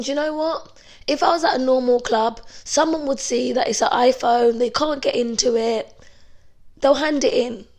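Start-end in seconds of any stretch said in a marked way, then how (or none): none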